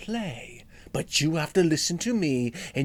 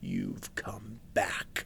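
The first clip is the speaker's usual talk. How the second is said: deep, low, creaky, rumbling monster voice; 6 semitones lower, 8 dB quieter than usual. Reading a children's story, the monster speaks to Dexter: low, rumbly monster voice. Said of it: "said the monster in a low, rumbly voice".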